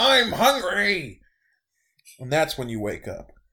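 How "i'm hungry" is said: pitched-up screaming. Narrating a dream to the players as an unusual presence, screaming. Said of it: "And it screams again".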